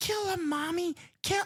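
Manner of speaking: put-on very high, small child's voice. Describing a scene, repeat a character's line in a child's voice. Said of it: "she does this child's voice".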